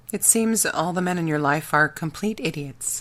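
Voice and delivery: ordinary talk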